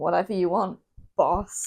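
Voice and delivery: mock snide delivery. Retelling what Finn Balor says after Priest leaves the room: snarky Finn Balor impression. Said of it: "says in a snarky sort of tone".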